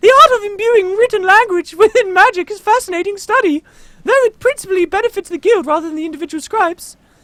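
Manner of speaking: fairy voice pitched very high. Reading a Sylvari character's game dialogue aloud: fairy-like Sylvari voice. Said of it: "he has to talk like a fairy".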